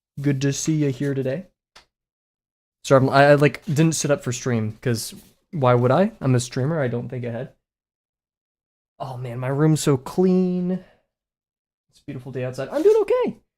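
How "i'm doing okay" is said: very high, pitched-up, lifted voice. Telling chat how the day is going, in a raised pitch. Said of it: "the raise and pitch of my voice".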